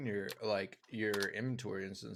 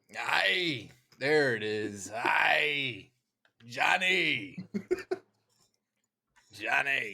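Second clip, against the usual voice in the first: very loud, raspy pirate voice, stretched "Hi"; 3 semitones higher, 9 dB louder than usual. Calling out to Johnny while playing, in a Long John Silver voice. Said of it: "Going for that Long John Silver Treasure Planet voice".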